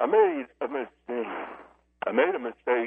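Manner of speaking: voice cracking with distress.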